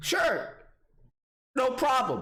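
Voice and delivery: high voice cracking under the strain. Retelling handing over his id when asked, retelling with a cracking voice. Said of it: "Now my voice is cracking right now".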